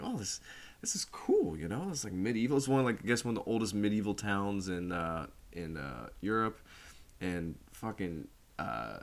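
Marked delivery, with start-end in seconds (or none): 0.0-2.6 play-acted eager, excited, swooping and quick. Retelling the film's opening as Ken heads into Bruges: imitating Ken, excited. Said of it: "he's kind of excited".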